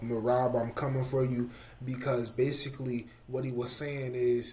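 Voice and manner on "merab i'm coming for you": usual speaking voice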